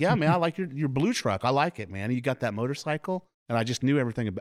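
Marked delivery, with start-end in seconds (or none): 0.0-3.3 mock, high, all-excited, eager gushing chatter. Retelling answering a man who first spoke to them, acting out past excitement. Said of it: "And I was all excited".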